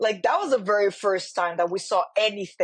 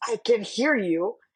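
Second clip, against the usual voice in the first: mock sassy put-on attitude. Retelling an anime scene where Mahito answers Yuji's scream; sassy Mahito retelling. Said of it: "it's the sassiness".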